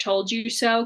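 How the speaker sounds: ordinary talk, nothing marked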